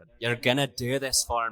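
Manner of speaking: Scottish-sounding voice. Trying out a quoted line in a northern irish accent, drifting scottish. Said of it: "You're going Scottish".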